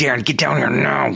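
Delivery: stern, firm, commanding dad voice.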